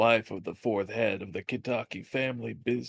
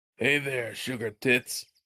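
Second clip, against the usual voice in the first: put-on chronic old smoker's voice, dive-bar style. Dared to say a line, speaking in a dive-bar smoker voice. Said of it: "Now you sound like a smoker who at a fucking dive bar".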